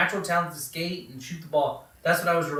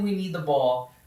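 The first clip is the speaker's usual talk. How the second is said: ordinary talk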